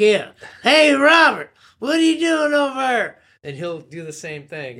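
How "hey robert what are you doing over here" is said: heavy put-on Southern accent, very high and loud. Showing the characters the two of them do together, going real Southern. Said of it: "I'll get real southern and just start talking like".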